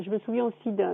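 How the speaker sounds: normal talking voice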